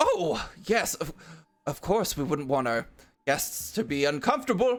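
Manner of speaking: put-on elderly man character voice. Voicing the old man welcoming sunburned guests: voicing the old man. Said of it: "the old man is like".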